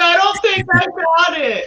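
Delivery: very high, panicked, anxious squeak.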